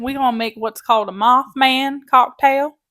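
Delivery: very loud, put-on hillbilly twang. Co-host starting a cocktail-making segment, speaking in a hillbilly voice. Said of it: "speaking in a hillbilly voice".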